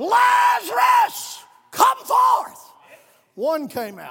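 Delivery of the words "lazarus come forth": loud, high, commanding shout with "Lazarus" drawn out. Recounting Jesus calling Lazarus from the grave, retelling a loud shout. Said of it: "with a loud voice".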